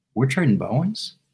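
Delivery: mock meek, sheepish, questioning tone. Retelling how a fan asked about a trade: imitating a sheepish question. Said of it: "very sheepishly".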